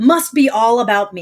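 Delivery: ordinary talk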